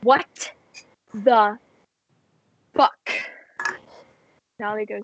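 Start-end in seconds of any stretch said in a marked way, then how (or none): 0.0-3.1 very stressed, blurted out. A game narrator voices Ollie coming in holding a weasel: stressed Ollie voice. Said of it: "looking very stressed and goes".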